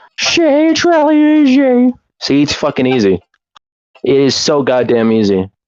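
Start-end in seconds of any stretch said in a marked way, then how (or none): 0.2-1.9 very high, slow, drawn-out cartoon character voice. Showing another speaker how easy the voice is: Carl Wheezer voice. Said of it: "I have the perfect Carl Wheezer impression".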